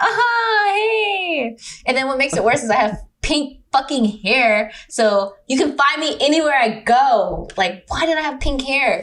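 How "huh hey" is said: fake, put-on cheery tone. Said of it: "I'm like".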